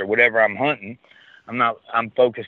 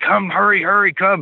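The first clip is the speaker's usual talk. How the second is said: mock shrill hollering, very high-pitched screaming; 10 semitones higher than usual. Retelling a man screaming at the speaker over a track, imitating his screaming. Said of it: "He's like screaming at me".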